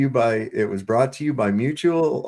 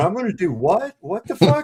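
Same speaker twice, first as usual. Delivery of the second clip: pitched-up, balking, protesting tone; 9 semitones higher than usual. Retelling the assistant's reply to a dangerous task: imitating Jim protesting. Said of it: "the Jim's over there going".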